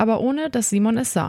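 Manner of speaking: plain reading voice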